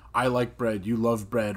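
ordinary talk

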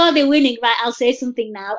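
ordinary talk

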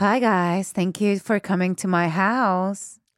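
voice like over a pa speaker. Acting out a host greeting party guests over the PA: voice over a PA speaker. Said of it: "A voice, a P A, my voice".

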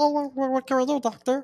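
very unusual, odd, very high-pitched voice.

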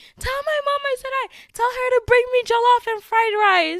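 very high, loud, excited shout.

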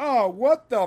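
mocking, sardonic, sarcastic tone. Describing how a character reacted on screen, imitating a sarcastic tone. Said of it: "he had like that sarcastic tone where he's like".

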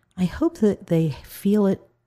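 ordinary delivery

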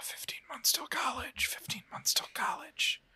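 soft, repeated, whispered chant-like delivery.

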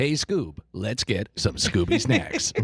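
put-on smooth radio announcer voice. Recording lines to run through a machine, the speaker uses a Casey Kasem voice. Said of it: "my signature Casey Kasem tone of voice".

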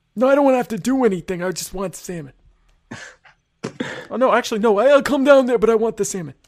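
high, insistent, complaining sitcom-style griping. Arguing about getting salmon from the other speaker: Larry David impersonation. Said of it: "Excellent Larry David impersonation".

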